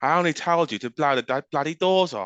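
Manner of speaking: line belted out, high and loud. Doing an impression for the others: Michael Caine impression. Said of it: "I'll do my impression again".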